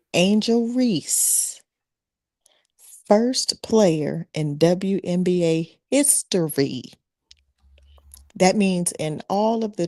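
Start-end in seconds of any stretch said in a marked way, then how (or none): 0.1-6.9 very slow, deliberate, sinking-in pacing. Ask everybody to hear you, then make your point about a player, saying it slow. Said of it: "I'm gonna say it slow".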